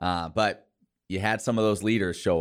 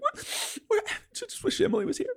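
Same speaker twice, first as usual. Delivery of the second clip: mock emotional, choked-up voice catching. Retelling how the cohost acted last week: imitating Rhett choked up and emotional. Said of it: "he kept getting choked up and emotional".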